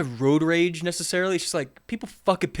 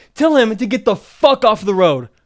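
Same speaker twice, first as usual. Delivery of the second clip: mock yelling, an acted shout; 5 semitones higher, 10 dB louder than usual. Retelling shouting from a car window at a woman on the road, retelling a yell. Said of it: "I'm like yelling".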